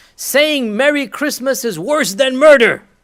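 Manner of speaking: overzealous, fiery outburst, very loud and very high. Quoting an overzealous young YouTuber's claim: imitating a fiery voice. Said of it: "in his fiery voice".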